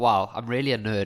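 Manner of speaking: talking with words broken up by laughter. Explaining why haloalkanes are like failures, laughing while talking. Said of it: "look how I'm laughing".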